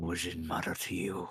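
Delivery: hushed muttered aside under the breath. Voicing a character who answers a silent question, muttering under his breath. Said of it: "He says under his breath".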